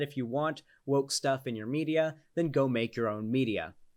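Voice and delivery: ordinary talk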